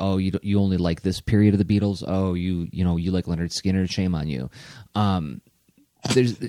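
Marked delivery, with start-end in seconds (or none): none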